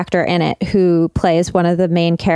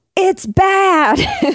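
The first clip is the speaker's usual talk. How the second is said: mock very high, fed-up, mad yelling outburst; 13 semitones higher than usual. Retelling what was yelled when the episode ended: imitating own yell. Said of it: "I yelled".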